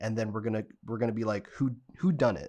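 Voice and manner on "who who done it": usual speaking voice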